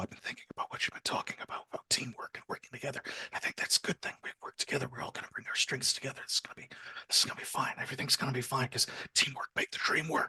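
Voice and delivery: hurried, rushed, very quiet whisper. In character, quietly telling Sybil about teamwork: very quiet voice. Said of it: "very, very quietly saying to Sybil".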